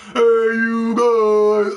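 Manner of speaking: put-on very high, loud, shrill odd kid yell. Retelling a stranger in an online party: imitating a Goonies character voice. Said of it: "sounded like the guy from the little Aspergian weirdo from the Goonies".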